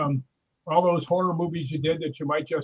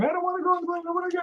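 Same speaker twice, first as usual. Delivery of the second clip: put-on scared, upset woman's voice, higher; 13 semitones higher, 3 dB quieter than usual. Retelling a joke about a woman boarding an airplane: imitating a scared, upset woman. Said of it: "She was really scared".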